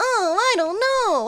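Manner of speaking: whiny put-on voice. Retelling how a grown-up character still talks, imitating a whiny voice. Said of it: "it's just so whiny".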